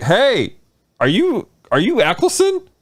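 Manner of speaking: very high, very slow, drawn-out swooping holler. Retelling spotting a man dressed as the ninth Doctor, retelling a yell. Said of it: "and I yelled".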